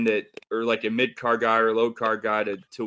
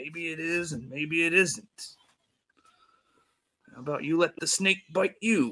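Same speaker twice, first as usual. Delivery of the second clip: put-on raspy wrestler voice, higher and quieter; 6 semitones higher, 4 dB quieter than usual. Retelling a story about a snake, doing a Macho Man impression. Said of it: "a pretty good, uh, Macho Man impression".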